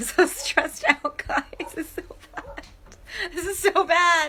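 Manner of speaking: hoarse, strained voice giving out, pitched very high. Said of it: "I'm losing my voice".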